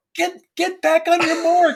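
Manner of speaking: furious, high, drawn-out screaming. Retelling how a man screamed at a puppeteer on a shoot without sound; retelling a scream. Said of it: "he's screaming like".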